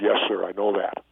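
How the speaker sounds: ordinary talk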